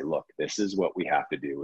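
put-on overly stern voice. An interviewer quotes how the guest stops student presentations, mock-stern. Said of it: "in probably a very stern, overly stern voice".

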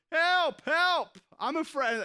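high, stretched-out, scared, frightened wail. Telling a story, the speaker acts out a falling climber: imitating a frightened cry. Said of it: "And he was afraid".

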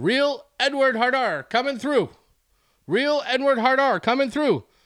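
high, repeated, bellowed yell. Retelling a man weaving through a crowd, imitating him yelling. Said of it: "he's just yelling that out".

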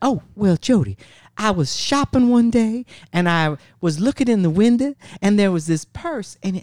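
sweet, high, little Southern belle voice. Speaker quotes grandmother answering a question, in a little Southern belle voice. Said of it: "She sounded like a little Southern belle".

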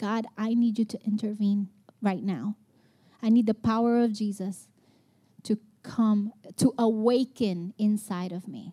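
tearful, crying, pleading voice. Speaker retells lying on the floor, praying to God; retelling a crying prayer. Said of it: "crying and like".

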